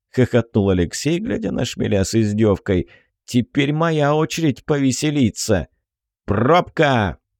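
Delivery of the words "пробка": sharp, barking delivery. A commander cuts in on a scientist's mocking boast, barked. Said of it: "рявкнул командир Шакалов".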